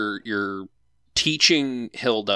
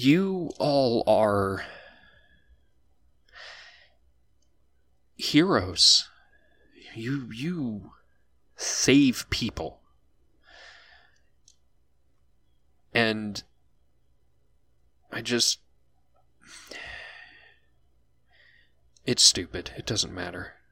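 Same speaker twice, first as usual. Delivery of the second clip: on the verge of tears; 4 dB quieter than usual. In a game scene, a character speaks to the heroes, holding back tears. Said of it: "you can see she's holding back tears".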